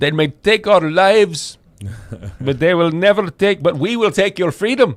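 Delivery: put-on Indian accent. Quoting William Wallace, in an accent that comes out Indian. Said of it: "that's more Indian".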